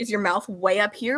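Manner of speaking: usual speaking voice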